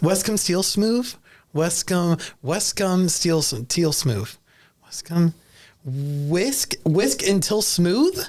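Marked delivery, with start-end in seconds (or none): 0.0-1.1 rattled off fast in a high-pitched rush. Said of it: "Say it fast".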